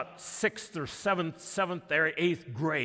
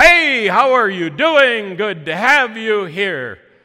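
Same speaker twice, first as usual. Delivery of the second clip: big, booming, resounding raised voice; 5 semitones higher, 15 dB louder than usual. Storyteller voicing a tall man who comes over to diners, in a booming voice. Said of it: "came over with a booming voice".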